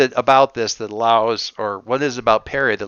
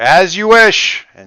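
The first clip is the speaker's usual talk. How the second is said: loud, high-pitched shout; 9 semitones higher, 7 dB louder than usual. Voicing a character walking away: shouting over her shoulder. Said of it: "shouts over her shoulder".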